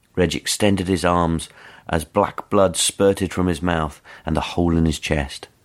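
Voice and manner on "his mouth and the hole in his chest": ordinary delivery, nothing marked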